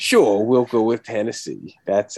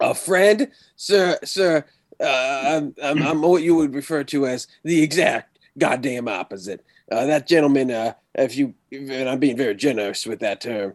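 poorly done put-on Texan accent, pitched higher; 4 semitones higher than usual. Player answers a question in character as Wagoneer, bad Texan accent as Wagoneer. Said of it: "this is definitely not a Texan accent".

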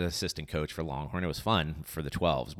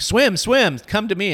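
shrill, very loud, high-pitched coach-style shout; 14 semitones higher, 10 dB louder than usual. Recalling the other host coaching kids to swim over, imitating their yelling. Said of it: "You were yelling at them like".

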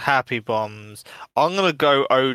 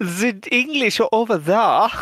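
put-on camp German voice, flamboyant; 10 semitones higher, 4 dB louder than usual. Playing a character in a scene: camp German accent. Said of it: "a really camp German".

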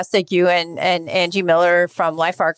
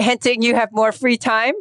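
playfully teasing, higher pitch; 5 semitones higher than usual. Interviewer to a board applicant who mentions older kids, teasing. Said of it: "I'm just teasing you".

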